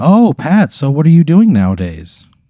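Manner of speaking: high, loud, bright-eyed eager reporter voice. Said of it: "And she goes".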